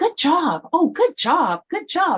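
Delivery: very high, bouncy, chirpy sing-song. Recalling a woman praising small children at a table, in a high, chirpy voice. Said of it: "in this kind of high, kind of chirpy voice".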